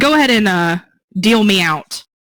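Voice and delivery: loud calling out. Voicing a character calling back to the guards he played cards with: yelling out. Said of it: "he kinda yells out".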